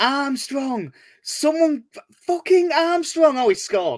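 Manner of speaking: high, desperate shouting.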